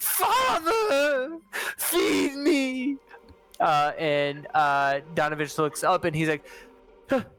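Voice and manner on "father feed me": unearthly, inhuman, very high shriek. Narrating a scene where something beneath a chapel's floorboards cries out, an inhuman scream. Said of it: "an inhuman scream rises from beneath the floorboard".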